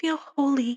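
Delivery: put-on soft, high, small twelve-year-old girl voice. Retelling a girl's answer after a man finishes praying, in a little twelve-year-old girl voice. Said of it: "her little twelve year old girl voice".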